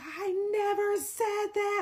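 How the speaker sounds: very slow, dragged-out shouting. Retelling a phone argument where he yelled at the speaker: imitating him yelling. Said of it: "he's yelling on the phone".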